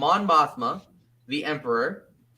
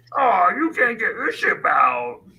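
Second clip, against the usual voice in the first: goofy put-on old creature voice, higher and louder; 4 semitones higher, 5 dB louder than usual. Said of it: "a voice very similar to Yoda".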